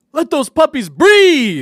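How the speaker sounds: excited high, slow yell.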